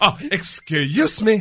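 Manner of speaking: put-on Spanish-sounding accent.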